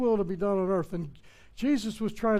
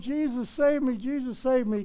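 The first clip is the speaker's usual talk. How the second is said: mock yelling, mild and held in; 4 semitones higher than usual. Retelling a man begging jesus to save him: imitating someone yelling. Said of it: "He's yelling".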